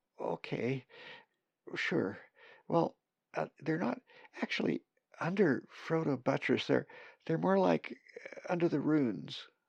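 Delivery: tiny put-on voice. Narrator reading a story, Kathy answering the main raven in a tiny voice. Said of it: "Kathy began in a tiny voice".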